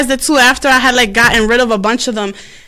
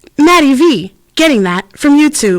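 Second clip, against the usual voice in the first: smart-speaker style voice-assistant voice; 3 semitones higher than usual. Retelling how the remote's assistant misheard the request: imitating Alexa. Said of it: "And she's like".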